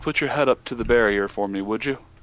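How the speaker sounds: slightly shaky, a little tremble in the voice. A man speaks to Nyota in a scene; slightly shaky voice. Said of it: "with a bit of a shaky voice".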